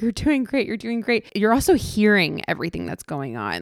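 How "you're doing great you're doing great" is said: quick put-on reassuring tone through half a laugh. Retelling her partner reassuring her during her C-section, imitating half-laughing reassurance. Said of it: "He's like half laughing".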